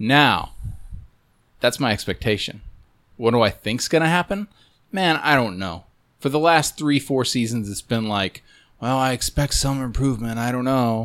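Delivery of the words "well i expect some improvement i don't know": hopeless, resigned tone, sounding like all hope is gone. Voicing years of hopeless offensive line expectations: Brett impression. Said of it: "that sounded like your Brett impression".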